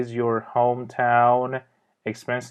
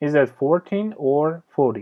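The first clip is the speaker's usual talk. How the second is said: pitch rises on fourteen, falls on forty; 3 semitones higher than usual. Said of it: "در اینجا تون صدا میره بالا forty، تون صدا میاد پایین".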